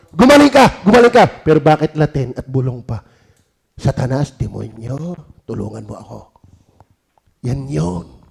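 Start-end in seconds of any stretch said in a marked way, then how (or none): 0.2-1.3 high-pitched loud yelling. Showing healing words are shouted, not whispered: shouted loudly. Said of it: "hindi binubulong, sinisigaw yan".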